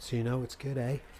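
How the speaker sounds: put-on Australian accent. Reviewing a product made in Canada, joking: put-on Australian accent. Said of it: "That was Australian".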